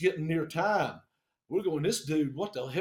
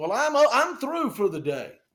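loud, pitched-up, put-on country accent; 6 semitones higher, 6 dB louder than usual. Retelling a guy answering a call on speakerphone on a saturday, in a put-on country voice. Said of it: "Country voice".

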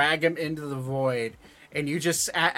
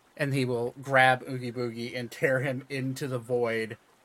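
usual speaking voice

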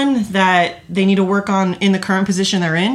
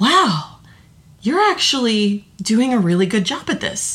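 genuinely astonished, really surprised tone. Retelling the general manager's reaction a few months later, in a mock-surprised tone. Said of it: "in a really surprised tone".

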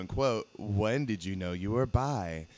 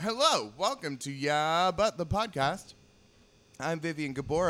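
pitched-up talk through a full mouth; 6 semitones higher than usual. Podcast host opens the show with a donut in the mouth, talking with a mouth full. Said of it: "I have Donut in my mouth".

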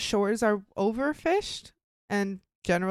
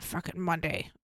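put-on grumpy gruff sailor voice, lower, quieter; 5 semitones lower, 7 dB quieter than usual. Imagining grumpy, gruff sailors on a cold morning: imitating grumpy gruff sailors. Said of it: "I don't think I could do that voice again".

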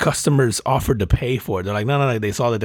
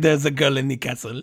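put-on French accent, higher pitched; 4 semitones higher than usual. Showing how the speaker acts around the kids: Lumiere voice. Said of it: "my go-to line for anything French".

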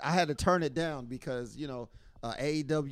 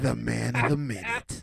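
rasping, rough, creaky put-on voice; 3 semitones lower than usual. Hyping a returning co-host like a promo: D B impersonation. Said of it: "That was my best D B impersonation".

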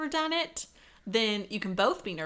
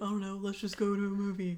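offhand, put-on bloke voice; 3 semitones lower, 4 dB quieter than usual. Acting out a partner's reply about date-night plans, in a guy voice. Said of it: "That's my guy voice".

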